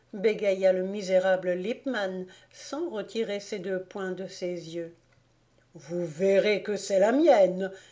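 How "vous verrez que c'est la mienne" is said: crushing, heavy sarcasm, louder. Father Krauk answers the stammering Lippmann; crushing irony. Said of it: "avec une ironie écrasante".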